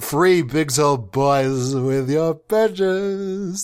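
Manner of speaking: sing-song delivery. Showing off other voices, next a musical one: musical delivery. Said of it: "That's just musical".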